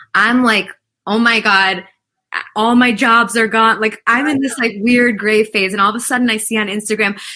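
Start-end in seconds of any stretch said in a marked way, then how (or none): none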